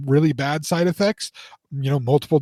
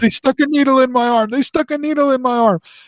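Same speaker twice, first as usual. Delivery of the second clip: indignant, insistent, high-pitched repeated yelling; 8 semitones higher, 4 dB louder than usual. Speaker recounts him yelling the whole way back about the iv: imitating someone yelling. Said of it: "he is yelling at me the entire time".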